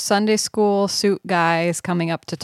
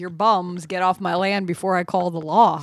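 usual speaking voice

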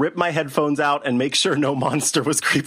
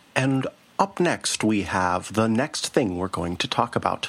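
put-on calm public radio announcer voice, lower; 5 semitones lower than usual. Reading the next show segment as a joke: mock NPR voice. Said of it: "I will read the rest of the show in an N P R voice".

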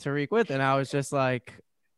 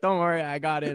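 ordinary delivery

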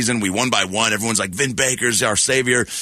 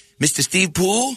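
put-on very high, small little kid voice; 9 semitones higher than usual. Retelling walking up to a famous TV guy as a kid: little kid from the projects. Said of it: "I talk like a little kid from the projects".

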